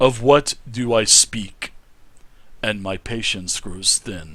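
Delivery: booming, very loud deep voice. Voicing a guardian armor posing a riddle: booming deep voice. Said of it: "a booming voice rings out".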